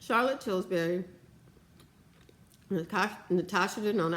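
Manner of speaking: speech muffled by food in mouth. Naming makeup brands while eating: talking with food in mouth. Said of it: "I got food in my mouth".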